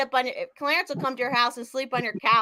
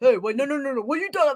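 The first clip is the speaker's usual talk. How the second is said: put-on deep voice, dropped way down low. Imitating how someone sounds when he busts out his voice: imitating his low voice. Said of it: "It's so low".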